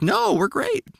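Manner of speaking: squeaky voice shooting up very high, rising. Retelling the wife's answer about the podcast: imitating wife, voice going up. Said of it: "Your voice go up like that?".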